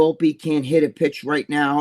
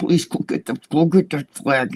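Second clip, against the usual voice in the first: mock muffled, smothered, stifled laughter; 2 semitones lower than usual. Retelling holding in laughter, face pressed into his son's back, mock-muffled, stifling laughter. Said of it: "I stick my face in my son's back".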